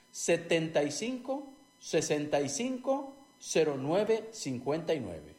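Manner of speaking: slowed-down delivery. Repeating the phone number for listeners, said more slowly. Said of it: "Lo repito más despacio".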